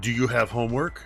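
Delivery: stern, acted, in-character voice. Voicing a character on the first day of school, stern questioning. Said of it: "this sort of stern look, and he goes".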